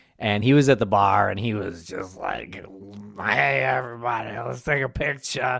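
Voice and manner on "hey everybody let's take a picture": put-on voice of a tipsy man. Retelling meeting Ken Kratz at a bar: imitating drunk Ken Kratz. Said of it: "Is that what his voice sounds like when he's drunk?".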